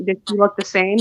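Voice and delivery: ordinary talk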